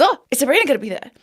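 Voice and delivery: acted high, giddy, eager excited tone. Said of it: "And so he's very excited".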